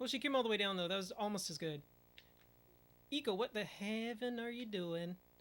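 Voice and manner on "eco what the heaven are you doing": put-on Texas accent. A gamer reacting after a failed attempt in the game, in a put-on Texas accent. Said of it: "How's my Texas accent coming out there".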